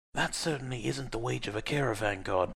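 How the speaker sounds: soft, muttered under the breath. Aline mutters to Arsym as Hugo pays: muttered. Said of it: "Aline muttered to Arsym".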